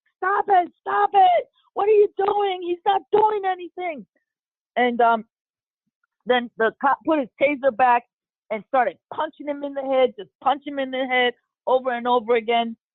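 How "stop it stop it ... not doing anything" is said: put-on very high, frantic, pleading scream. Retelling what the group screamed during the tasing: imitating a group screaming. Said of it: "We're all screaming".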